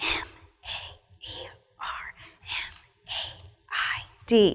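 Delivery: hushed, very soft, slow, drawn-out whisper. Spelling a word aloud with a class: whispering. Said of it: "Now we're gonna whisper it".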